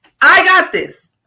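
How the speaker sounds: said very loud and high, full of belief. Leading someone to repeat the words after them, saying it real loud. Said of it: "Just say like real loud".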